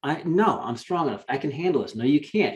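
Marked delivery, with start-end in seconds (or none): none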